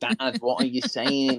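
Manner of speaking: imitated Mancunian accent in a child's voice. Imagining a son who grew up in Manchester, speaking in a Mancunian accent. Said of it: "my son is gonna grow up with a Mancunian accent".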